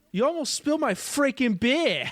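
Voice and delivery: put-on very high, shrill, loud Boston accent, woman's voice. Quoting a favorite line from a movie character, in a Boston accent. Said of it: "It's just in the Boston accent".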